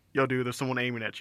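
hushed, barely there half-whisper, kept low. Retelling a warning heard while playing a game: imitating a half-whisper. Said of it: "I just hear a whisper like".

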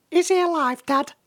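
very high, tiny, faintly worried, concerned little voice. Narrating a story, a character speaks to Dad in a tiny voice with concern. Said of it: "said the tiny voice with a hint of concern".

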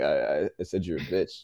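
nervous, stumbling stammer repeating I. Retelling answering a guy at a club: imitating own stuttering.

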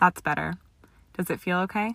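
ordinary delivery, nothing marked

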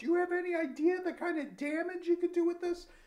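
put-on, shrill, very high, loud yell. Retelling a Peterson story where a cop gets the BB gun and yells at the group, retelling a cop shouting. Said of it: "is like shouting at the group".

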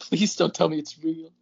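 put-on crushed, heartbroken, pleading voice. Mimicking a friend's plea right after hearing heartbreak in it: imitating Joseph's heartbroken voice. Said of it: "heartbreak in Joseph's, in Joseph's voice there".

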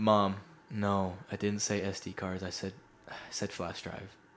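mock let-down, disappointed voice. Retelling a call with Mom about the wrong purchase: imitating own disappointed tone. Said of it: "I had this disappointed".

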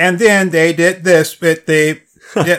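choppy robotic text-to-speech voice. Retelling a video narrated by a text-to-speech voice: choppy Siri robot voice. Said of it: "chopping sentences up".

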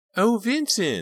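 ringing, very loud, very high cry. Narrator reading a novel, an unidentified voice cries out: crying out in a high voice. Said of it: "a high voice cried".

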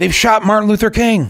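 mock very high, loud shout. Retelling a man raised above the cars announcing news to everyone; imitating a shout. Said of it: "And he shouts out".

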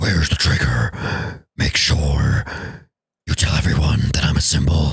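very low, deep superhero voice.

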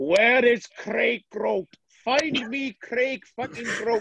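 put-on Welsh accent. Retelling a phone call, the speaker imitates the hotel management's Welsh voice. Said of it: "I hear a Welsh voice".

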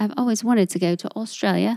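light, quick, put-on English accent. Talking about where listeners are from, the speaker tries a voice: put-on English accent. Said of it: "that's more of my English voice".

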